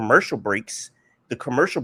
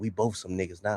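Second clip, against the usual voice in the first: very quiet, hushed half-whisper; 5 semitones lower, 9 dB quieter than usual. Retelling a mockumentary scene where Lincoln speaks to Harriet: imitating a half-whisper. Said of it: "he looked at Harriet and he whispered".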